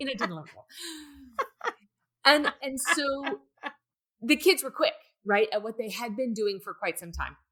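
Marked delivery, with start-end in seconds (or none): 0.0-0.7 words rattled off rapid-fire, at high speed. Taking a dare to do the count again, counted off very fast. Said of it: "say it really fast".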